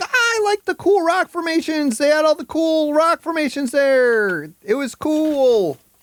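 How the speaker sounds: put-on very high toddler voice with drawn-out "cool". Mocking another speaker's comment about the rock formations: imitating someone as a toddler. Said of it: "He's seriously like a fucking toddler".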